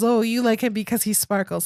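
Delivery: normal talking voice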